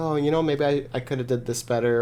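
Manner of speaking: usual speaking voice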